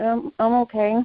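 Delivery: soft, sad, downhearted little voice. A caller on a call-in show answers the host, in a sad voice. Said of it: "You sound sad".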